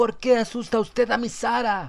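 very high, shrill, screeching, furious outburst. Narrating a story where a neighbor woman confronts Carson, shrill, furious shout. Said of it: "salió una mujer de la casa adyacente. Al verle sus enormes pechos, se agitaron. estalló en una chillona y furiosa diatriba. [name] se volvió y se quedó mirándola con ojos desconcertados. La cabeza le dolía dolorosamente. La mujer se acercaba ... estalló en una chillona y furiosa diatriba".

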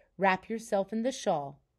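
ordinary talk

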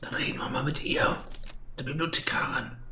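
soft, quiet mock whisper.

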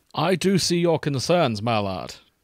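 acted villainous voice. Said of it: "We're just all in on Bane".

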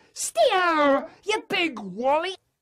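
very shrill, very high, loud shout. Reading a story aloud, a character called Haribo shouts: shouting. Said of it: "shouts Haribo".

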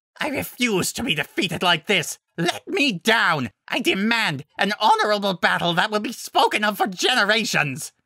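struggling, demanding, high-pitched shouting. The Alpha, caught in Fluttershy's vines, yelling. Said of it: "the Alpha yelled".

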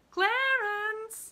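ringing falsetto call, very high and loud. A woman calls out for clarence, calling in high falsetto. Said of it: "she called in a high falsetto voice".

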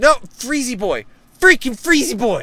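very high, shrill, very loud shouting. Speaker reacts mid-drawing, yelling. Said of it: "but I just love that you're yelling about it".

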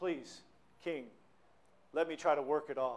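put-on pleading tone. Telling a parable, the speaker voices the debtor begging the king, mock pleading. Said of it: "But he was pleading".

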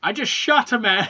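shrill, very loud, high, drawn-out scream. Retelling a favorite movie scene after a character shoots someone: imitating someone screaming. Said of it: "He starts screaming".

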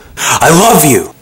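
all-out loud, swooping scream. Vlogger talking to viewers at the start of a video: screaming. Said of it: "Sorry about the screaming".

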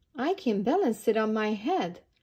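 ordinary talk

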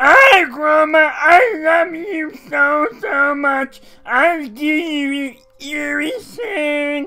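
goofy, very high, very slow monster voice, drawn-out "you". Speaker voices a big Machamp with a Ditto face, in an imagined Machamp voice. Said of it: "that's how I picture him sounding".

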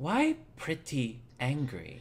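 deeply worried, caring, with swooping pitch. Voicing a character asking a companion why she is angry: very concerned tone. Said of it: "asks in a very concerned tone".

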